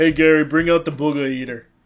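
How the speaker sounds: energetic shock-jock radio voice. Doing a quick Howard Stern impression on a podcast: Howard Stern impression. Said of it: "That was my, uh, Howard Stern".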